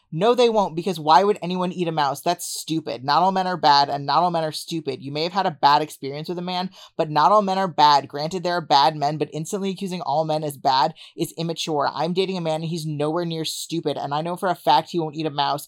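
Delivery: ordinary talk, nothing marked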